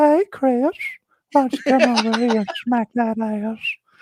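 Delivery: squeaky, very high-pitched cartoon voice. Showing an impression where the brother is called Chris: Herbert the Pervert voice. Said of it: "Herbert the Pervert".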